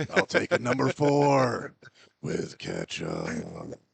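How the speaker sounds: big, rough, creaky, swooping announcer voice, "four" drawn out. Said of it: "he'll act like [name] at like a drive-through".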